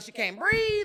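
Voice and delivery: loud, high-pitched protesting yell. Retelling a girl's words as police grab her: imitating someone yelling. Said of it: "She started yelling".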